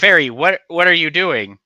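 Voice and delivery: high yell projected into the distance. Voicing the bard calling out to the fairy: yelling out. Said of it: "Yelling out in a way".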